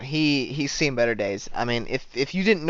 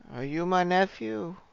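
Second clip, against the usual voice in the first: put-on high, confused, befuddled old man voice; 6 semitones higher, 4 dB quieter than usual. Voicing a demented old man who asks a player a question: demented old man voice. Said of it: "you're talking to a demented old man".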